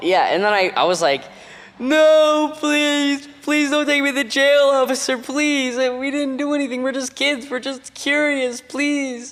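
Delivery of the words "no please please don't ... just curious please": very high, drawn-out, weepy, sobbing, begging voice. Retelling begging a police officer not to take them to jail, imitating crying plea. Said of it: "And I started crying like really hard".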